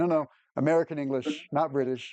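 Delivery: ordinary talk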